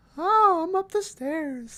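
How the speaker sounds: very high, slow, drawn-out falsetto. Discussing a movie's character, imitating Ethan Hawke's high falsetto. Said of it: "like his high falsetto".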